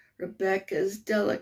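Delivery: plain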